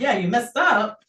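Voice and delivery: ordinary talk, nothing marked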